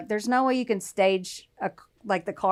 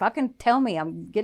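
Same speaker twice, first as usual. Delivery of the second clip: put-on angry outburst. Retelling how a man demanded an answer from a woman, mock-angry quote. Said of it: "getting mad because he knew she knew".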